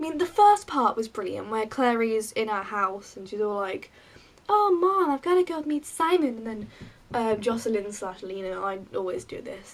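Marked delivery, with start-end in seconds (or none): 4.5-6.4 casual put-on American accent, pitched up. Retelling the opening scene, doing Clary in an American accent. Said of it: "My American accent makes me laugh".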